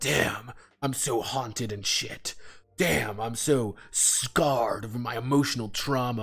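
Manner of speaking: tortured, brooding heartthrob voice. Mocking a brooding, handsome man from stories like Twilight: mocking a brooding haunted man. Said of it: "the brooding, handsome man who looks at me like".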